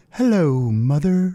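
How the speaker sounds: high, innocent-sounding voice. Describing a portrayal of Ed Gein: high, innocent Ed Gein voice. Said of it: "it's like very high pitched and innocent sounding".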